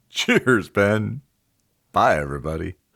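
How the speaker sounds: put-on drunk voice, best attempt at sounding drunk. Podcast co-host signing off to the other host, in a put-on drunk voice. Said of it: "I'm trying my best drunk voice".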